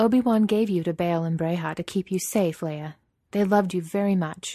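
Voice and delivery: ordinary talk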